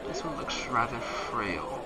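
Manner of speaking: slow, soft, looming snake woman voice.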